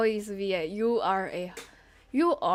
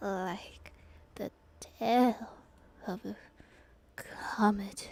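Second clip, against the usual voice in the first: weak dying voice, quieter, slower; 5 dB quieter than usual. Streamer voicing Hifumi as he dies, repeating the line, dying Hifumi voice. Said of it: "he's the ultimate fanfic creator. / that might have been when [name] opened his eyes. / Death for the second time".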